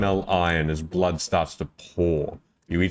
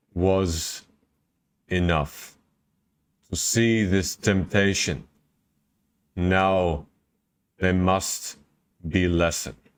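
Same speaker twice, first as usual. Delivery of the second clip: slow, halting, broken-up disappointed creature voice. Game master voicing a creature to the players, disappointed creature voice. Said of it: "almost as though there is a shred of disappointment".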